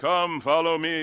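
put-on slight English accent. Acting out a grand call to follow: Jesus in a slightly English accent. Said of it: "with a slightly English accent".

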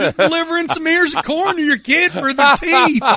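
put-on high-pitched Midwest farmer accent. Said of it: "Your Midwest farmer accent is a good one".

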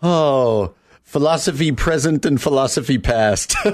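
uncomfortably awkward, offhand delivery. Retelling what a man walking behind the couple said: retelling an awkward remark. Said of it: "he just goes really awkwardly".

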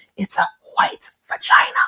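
hushed, confiding whispered aside. Retelling what a woman on the plane said: imitating a whisper. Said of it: "And then she whispers to me".

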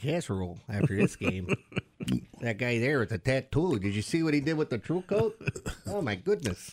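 Minnesota accent, easy chatter. Speaker comments on a guy during a game, in a Fargo-style accent. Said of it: "You sound like you belong on, what's that show? Fargo".

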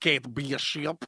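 put-on slow Russian accent, words drawn out, comically over-enunciated. Quoting a movie character's funny line: imitating Yelena's Russian accent. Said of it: "she's like".

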